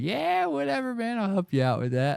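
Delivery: play-acted very high, carefree, sing-song holly jolly cheer. Acting out how they answered customers after smoking before work: imitating own holly jolly self. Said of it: "holly jolly".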